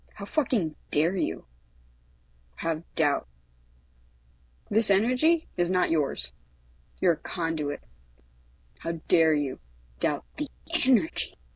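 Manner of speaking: usual speaking voice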